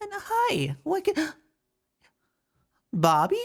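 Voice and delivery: ear-piercingly high shrill voice. As the door creaks open, the person behind it greets the visitors in an ear-piercingly high, shrill voice. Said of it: "ear-piercingly high, shrillish voice".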